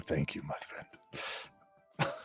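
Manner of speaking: slow, very soft, hushed, breathy whisper. Narrating a game scene, voicing a character speaking to the player: whisper. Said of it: "he whispers to you".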